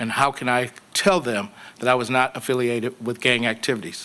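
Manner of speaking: plain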